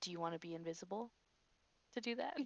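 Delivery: very soft, hushed half-whisper right at the ear. Speaking right up close to Call's ear, a very quiet half-whisper. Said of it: "I whisper even quiet, like really close to Call's ear".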